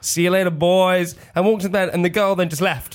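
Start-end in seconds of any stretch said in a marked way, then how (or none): 0.0-1.2 put-on American sheriff accent, higher, much slower. Retelling bringing a girl home, answering the guys: American sheriff voice. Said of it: "doing the voice of an American sheriff".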